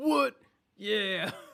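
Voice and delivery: very loud, high shout. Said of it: "That's my [name] impression".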